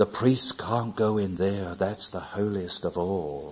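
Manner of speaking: quiet, hushed, soft voice under the breath. Recalling how he would speak, the speaker quotes him in a hushed voice. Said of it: "he would say with a hushed voice".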